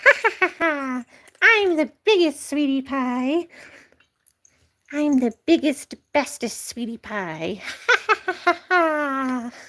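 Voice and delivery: slow, boastful pet voice with stretched ha-ha laughs. Talking to a pet, the speaker voices the kitten: Lucky's voice. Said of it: "Lucky says".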